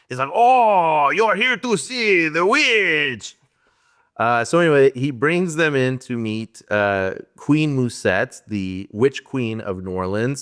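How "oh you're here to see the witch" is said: terrible fake French accent, pitched up, drawn-out oh. Describing Musette's valet, the speaker mimics Paul Schrader's worst-ever French accent. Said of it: "has the worst French accent ever".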